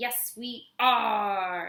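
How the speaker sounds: pirate-style voice, "are" stretched long. Teaching everybody a call-and-response, the speaker demonstrates the reply in pirate voice. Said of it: "in your best pirate voice".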